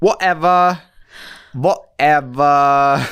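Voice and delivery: booming, high, drawn-out, bad put-on British accent. Teased by a co-host about accents, saying one word in a bad british accent. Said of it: "the only word that you do well in a British accent is whatever".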